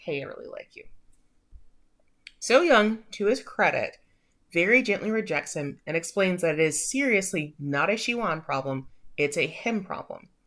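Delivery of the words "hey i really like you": very soft, hushed whisper. Retelling a character confessing his feelings: imitating a whisper. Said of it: "he just kinda whispers".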